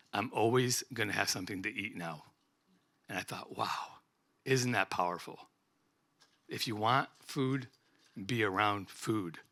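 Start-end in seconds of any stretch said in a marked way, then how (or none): 0.1-2.2 put-on grave, solemn, very serious and earnest tone. Quoting a man who showed him his knives: quoting him in very serious tone. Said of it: "he said to me in a very serious tone".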